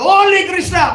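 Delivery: very loud, shrill, furious outburst. Retelling how he threw the deities away, imitating an angry fit. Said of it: "he suddenly went into a fit and he said".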